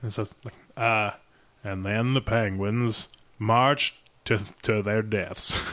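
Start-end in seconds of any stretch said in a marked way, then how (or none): 1.6-5.6 unhurried, really slow, phrased in groups of three. Showing an easy impression, speaking really slow: slow Morgan Freeman impression. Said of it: "the Morgan Freeman one, where it's just all slow".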